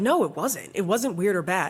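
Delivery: ordinary delivery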